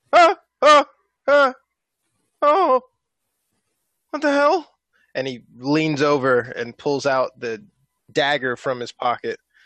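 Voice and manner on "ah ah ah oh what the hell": very high, shrill, loud startled cries. Playing Morty jumping up out of a nightmare: Morty waking from a nightmare. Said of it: "Morty jumps up out of a nightmare".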